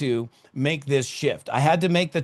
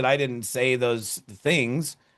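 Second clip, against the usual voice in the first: ordinary delivery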